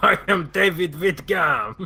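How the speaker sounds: put-on French accent. Reading out a new character name in a game: put-on french accent. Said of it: "that accent was in honor of them".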